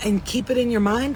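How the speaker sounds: ordinary delivery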